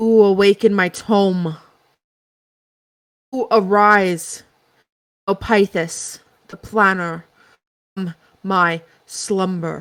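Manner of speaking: deep, gruff, deep-throated voice. The narrator voices a book that speaks to the players, in a deep, gruff voice. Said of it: "A deep, gruff voice comes from the book".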